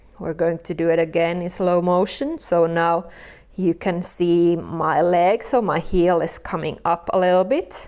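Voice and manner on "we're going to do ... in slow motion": usual speaking voice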